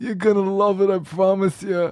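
put-on dying old man voice. Trying a zombie voice for a cinema welcome, sounding like a dying old man.

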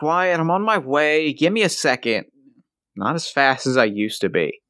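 gentle, friendly, mild, unthreatening tone. Narrator voices Johnny answering pounding on his door, Johnny's quiet voice. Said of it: "The next thing you notice is he's not looking great. I mean, Christ, like, you know the road is hard, but the kid looks 20 years older. ... except softer, less menacing".

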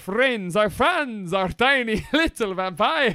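Transylvanian-accented voice. Host introducing fan emails, slipping into a put-on Transylvanian accent. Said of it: "Don't know why I slipped into the Transylvanian accent".

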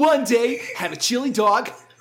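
cartoon hero voice with a permanent smirk. Describing how a band's vocalist sounds by imitating him, Sonic accent. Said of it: "talking in Sonic accent".

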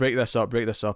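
ordinary delivery

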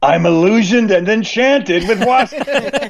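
very high, badly put-on crusty voice. Imitating how Dan delivers a line: bad crusty Dan voice. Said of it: "I'll do my bad crusty voice where he goes".

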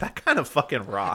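ordinary talk

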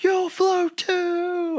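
play-acted very high scream, drawn out too long. Retelling a scary movie trailer scene with a clown: imitating the clown screaming. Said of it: "he's screaming".

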